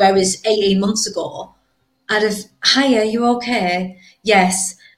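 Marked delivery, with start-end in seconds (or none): 2.6-4.0 put-on higher, careful phone voice, accent smoothed out. Speaker acting out how she answered the phone 18 months ago, put-on phone voice. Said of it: "I'd have had a very good phone voice".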